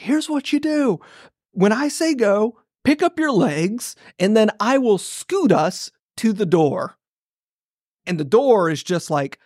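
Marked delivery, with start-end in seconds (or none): 0.0-7.0 mock, mild, pitched-up half-yelled delivery. Retelling what a grown man told him on his lap, imitating someone yelling. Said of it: "He's like yelling at me".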